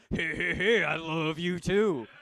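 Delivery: very loud, high, booming cartoon voice. Answering his partner as he leaves for work, in a Fat Albert voice. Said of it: "I only talk to her through Fat Albert".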